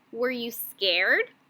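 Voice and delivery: questioning tune climbing upward on "scared". Teaching how to read a question mark, rising pitch on scared. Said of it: "My voice went up".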